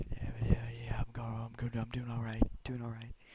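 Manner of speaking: barely audible, faint, very soft whisper. Retelling answering a nurse while barely able to breathe: imitating own whispering. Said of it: "it's, like, whispered".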